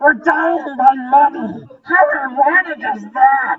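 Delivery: very high, shrill, loud screaming creature voice. Narrating kobolds being crushed by gold rushing down, in a screaming kobold voice. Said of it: "they're screaming like".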